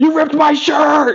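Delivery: mock unhinged, high, shrill upset outburst. Retelling a movie scene where his shirt gets cut: imitating Nicolas Cage, totally lost it. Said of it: "so upset about it".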